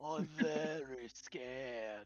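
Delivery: deeply unsettling, creepy character voice. Voicing a possessed character through Weirin's mouth: speaking as Weirin, creepy. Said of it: "I'm speaking out of Weirin's mouth".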